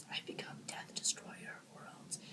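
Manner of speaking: very soft, whispered, barely audible delivery. Complaining about quiet movie lines, imitating Oppenheimer whispering. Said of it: "he's whispering like this".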